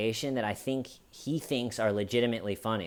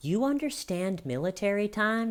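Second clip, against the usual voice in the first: mom-cop tone, pitched very high; 10 semitones higher than usual. Retelling a woman asking someone about military time, mom cop voice. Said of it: "Just in that mom cop voice".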